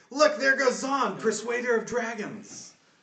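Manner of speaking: very high-pitched, loud cry. Game narrator voicing the town crowd as the heroes leave, crying out. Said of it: "Cry out".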